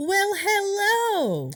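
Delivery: shrill, loud, high, swooping, with "hello" drawn out. Podcast co-host greets listeners at the start of the episode: loud greeting. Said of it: "I wanted to be loud".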